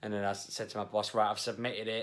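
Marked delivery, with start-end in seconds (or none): none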